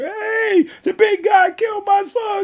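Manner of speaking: mock very high, stretched-out, drawn-out screaming. Retelling a football game story, quoting the parent on the other side: imitating a screaming parent. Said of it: "the parent on the other side screaming".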